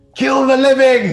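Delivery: piercing, shrill, very high and very loud shout. Voicing an unseen foe attacking intruders in the dark: shout from the darkness. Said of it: "you hear a shout from the darkness".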